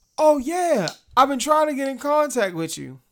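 high, loud, fake-friendly mock shopkeeper voice.

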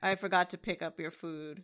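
mock-sad, put-on sorrowful voice. Retelling a line from a fight scene, imitating a sad boyfriend. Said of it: "it's like a sad boyfriend. He's like".

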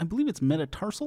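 poor high cartoonish voice. Giving a buzzer sound by imitating another speaker: impression of Jesse. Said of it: "are you doing an impression of me?".

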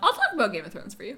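cracked voice breaking mid-line. Promising to talk about Game of Thrones personally, voice cracking. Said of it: "My voice cracked".

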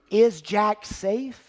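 a little worried, slightly concerned voice. Acting out how someone might speak today, in a slightly concerned voice. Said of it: "With a little concerned voice".

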